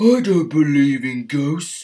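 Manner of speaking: very loud, high, scoffing, huffy snort. Reading a story, an engine answers a ghost legend: snorted. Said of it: "Henry snorted with a huff of steam".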